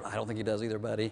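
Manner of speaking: whispering voice. Retelling a reply to a little son: retelling a whisper. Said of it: "And I kinda whispered".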